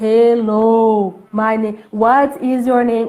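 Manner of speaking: very slow, drawn-out, mocking drawl. Retelling a classmate's bullying imitation: imitating a mocking slow voice. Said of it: "que nem como se fosse um, é, tivesse doença mental".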